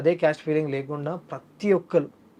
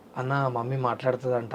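ordinary talk, nothing marked

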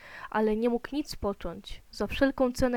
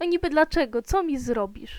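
scornful, jeering, sneering, mocking tone; 3 semitones higher, 4 dB louder than usual. Narrator reading a boy's reply to another boy's warning: sneering. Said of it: "szydził Noach".

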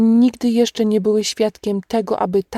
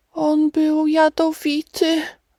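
sobbing whisper, much higher and slower; 6 semitones higher than usual. A woman collapsed on the ground after a snake bite speaks, whispering while sobbing. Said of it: "wyszeptała łkając".

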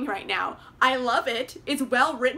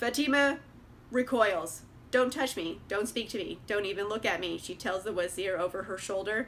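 dead-level flat monotone reading, no inflection; 5 semitones lower, 6 dB quieter than usual. Mocking an audiobook narrator's delivery of a scene, flat monotone reading. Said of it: "It's monotone. There's no inflections".

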